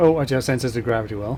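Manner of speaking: said a little too fast, rushed pace.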